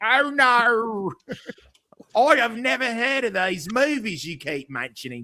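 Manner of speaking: very high-pitched Australian accent, drawn-out no. Asked by another speaker to hear an Australian accent: Australian accent on request. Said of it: "that's my Australian accent".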